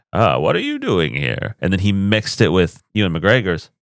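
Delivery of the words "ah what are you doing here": put-on elderly old-style film mentor voice. Showing how a voice actor borrowed an older Obi-Wan voice: Alec Guinness voice. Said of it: "he took the old Alec Guinness".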